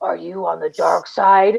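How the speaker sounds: voice dropped to the deepest low register. Retelling how a costumed villain questioned a visitor: imitating Kylo Ren's deepest voice. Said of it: "in the deepest voice asks him".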